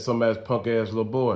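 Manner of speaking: ordinary talk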